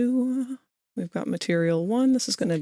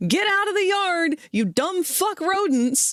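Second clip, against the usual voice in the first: put-on, very high, shrieking, all-out yell; 10 semitones higher than usual. Retelling yelling at rabbits in the yard while holding a dog on a leash, yelling. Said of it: "yelling at the rabbits".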